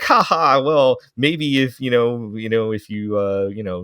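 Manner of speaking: play-acted smug, condescending tone, slow. Retelling an anime scene where the main girl answers a younger student: imitating a smug character. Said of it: "she's being very, you know, smug about it".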